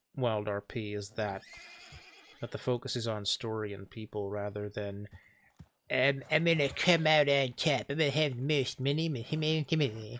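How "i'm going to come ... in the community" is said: put-on cartoon character voice. Talking about WildRP, a line in Cartman voice. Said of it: "I did that in Cartman voice".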